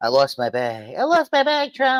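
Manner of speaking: very high, whiny put-on voice. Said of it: "she's gotta go to Trump and be like".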